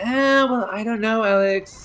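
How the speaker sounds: fake British-accented voice. Imitating what Jack is going to say, put-on British accent. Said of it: "in a British accent".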